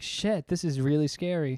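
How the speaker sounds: plain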